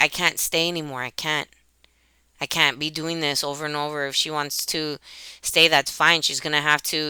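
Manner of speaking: ordinary talk, nothing marked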